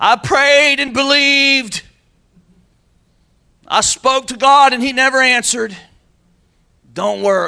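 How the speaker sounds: mocking, high, loud, slow complaining outburst.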